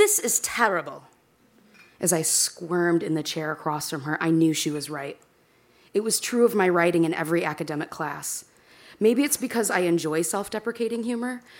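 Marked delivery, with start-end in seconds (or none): 0.0-1.0 mock snooty British accent, higher. Retelling a professor's verdict on an essay: imitating an arrogant british accent. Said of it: "in an arrogant British accent that I cannot do very well".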